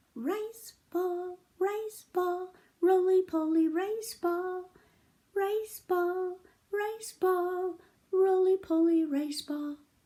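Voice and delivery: small, very high, very slow tiny voice. Storyteller voicing the little voice the man hears, in a tiny little voice. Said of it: "this little voice, and the voice went like this".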